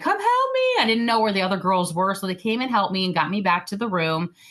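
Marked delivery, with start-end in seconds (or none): 0.0-0.8 frightened cry, pitched very high, screaming. Retelling being spat out onto the beach by a wave: retelling a scream for help. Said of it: "And I just started screaming".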